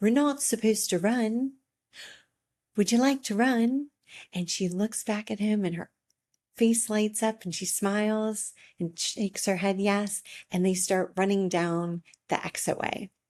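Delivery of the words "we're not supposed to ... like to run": put-on speaking with a British accent. Retelling what a father said to his daughter, in his British accent. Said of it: "in his British accent".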